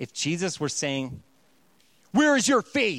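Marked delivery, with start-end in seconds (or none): 2.1-3.0 stern angry-dad scolding, raised and pitched up. Showing how Jesus's words would sound as a reprimand, Jesus reprimanding, angry-dad tone. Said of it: "he's reprimanding them".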